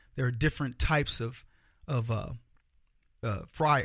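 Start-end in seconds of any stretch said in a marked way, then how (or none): none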